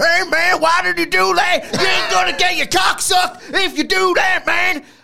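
shrill, loud, high-pitched, furious raging outburst. Telling of a date that went awry, the speaker does an impression of a man raging. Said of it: "That's my impression of him".

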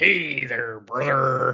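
pro-wrestler promo delivery. Asked to do a wrestler, trying one: Hulk Hogan impression. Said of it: "it's Hulk Hogan".

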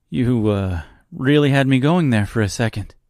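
laughing nervously. Dorothy answers Reginald, thinking he must be joking, with a nervous laugh. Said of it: "Dorothy laughed nervously".

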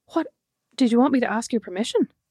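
acted baffled, confused tone. Speaker recounts their own reply, acting out being baffled. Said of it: "but also baffled, went".

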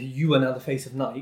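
plain

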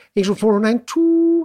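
mock posh telephone voice. Recalling how their mother answered the telephone: posh telephone voice. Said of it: "It was like this posh voice".

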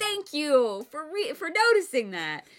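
eager, delighted gratitude, excited, high swooping voice. Retelling how the author reacted when the topic came up: imitating an excited Paolini. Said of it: "I love how excited Paolini got".

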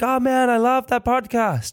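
put-on gushing American accent, very high. Quoting people on the street who praise the podcast: American accent. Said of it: "I don't know why I always do an American accent".

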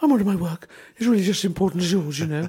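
high, loud, squeaky put-on woman voice. Retelling his exchange with her, imitating her voice. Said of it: "just hear your imitation there".

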